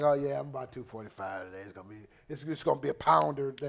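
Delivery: low, fast, sluggish joking tone. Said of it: "if I felt sluggish, I'd be like".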